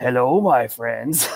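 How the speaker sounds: put-on full-on old uncle voice. Retelling how the actor greeted from behind while waiting: full-on Iroh voice. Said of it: "a full-on Iroh voice".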